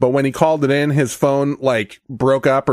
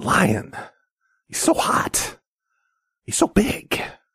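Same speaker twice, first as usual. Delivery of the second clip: very slow, low whisper sliding into a growl; 4 semitones higher, 5 dB quieter than usual. Imitating the speaker of the lion speech: impression, low whisper-to-growl voice. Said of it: "But then you have to get down here. Like this".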